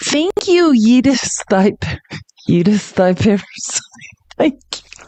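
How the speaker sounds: high, speaking through laughter. Thanking a subscriber by their funny screen name, laughing while talking. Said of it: "I couldn't even say that without laughing".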